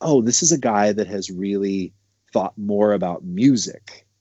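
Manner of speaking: ordinary talk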